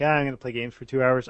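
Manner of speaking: plain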